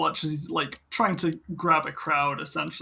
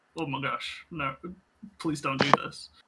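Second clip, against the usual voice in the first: ashamed, embarrassed pleading tone; 2 semitones lower, 3 dB quieter than usual. Voicing a servant whose injury is exposed at a party: ashamed pleading. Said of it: "she looks completely ashamed".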